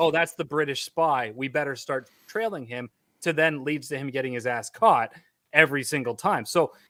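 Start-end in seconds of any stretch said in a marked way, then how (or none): none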